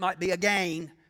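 regional pronunciation of again. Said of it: "If you're from certain parts of the country".

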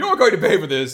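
put-on very loud, high, furious, entitled angry outburst. Retelling a character's demand at his arrest: imitating an angry rich person.

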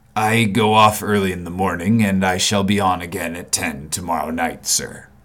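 peculiar, muted, low, subdued voice. A man answers the narrator's question about the next visit, in a low voice. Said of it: "sallow man with a dark beard and rather heavy eyebrows. ... in the low voice in which he had first spoken".

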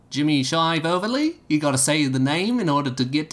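put-on Manchester accent. Taking up a challenge to do the best Mancunian accent. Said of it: "who's going to give me the best Mancunian accent".

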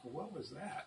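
tiny, high, very quiet little voice. The speaker voices a little voice reacting to something: little voice. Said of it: "this little voice".

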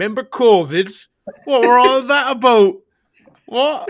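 shrill, very loud, high-pitched belted showpiece voice. Recalling a first thought on going back into shops, in a Peter Kay voice. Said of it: "in my best Peter Kay voice".

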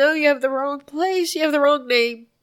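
acted-out screaming. Recounting being told the news and hearing his name: retelling a scream. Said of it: "And I just kept screaming".

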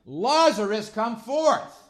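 very loud, very high-pitched cry. Reading scripture aloud, then acting out the call: Jesus's loud cry. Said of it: "That's how he said it".

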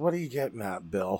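mock utterly uninterested, low, bored delivery. Retelling an actor rolling his eyes at a question: imitating an uninterested eye-rolling line. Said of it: "he literally rolls his eyes when he goes".

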